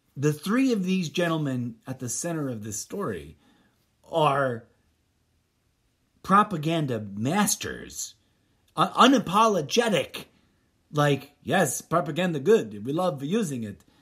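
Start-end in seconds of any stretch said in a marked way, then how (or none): 11.4-13.7 put-on Russian accent. Speaker mocks the story's propaganda masters, fake Russian accent like Muppet Vampire Count. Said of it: "sounded more like the Muppet Vampire Count than any kind of television show fake Russian accent".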